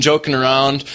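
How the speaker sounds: ordinary delivery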